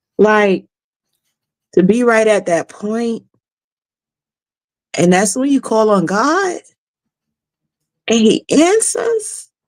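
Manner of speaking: tearful, on the verge of crying. In a conversation, speaking while about to cry. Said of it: "I'm about to cry".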